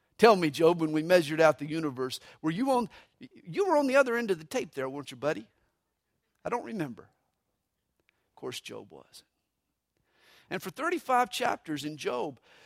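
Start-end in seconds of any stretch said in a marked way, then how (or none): 0.2-7.0 mock dry, needling, sarcastic, teasing god voice. Speaker retells God's challenge to Job; mock-sarcastic God. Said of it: "God even gets sarcastic with Job".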